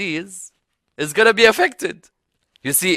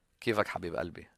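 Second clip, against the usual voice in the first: very quiet, gentle, soft, breathy whisper; 11 semitones lower, 20 dB quieter than usual. Showing how a woman could say the greeting more gently: softened speech. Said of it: "she could also soften her speech".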